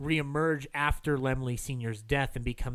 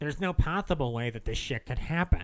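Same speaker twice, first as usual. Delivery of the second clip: ordinary talk, nothing marked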